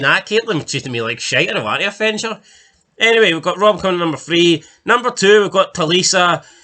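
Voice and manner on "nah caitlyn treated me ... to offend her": ordinary delivery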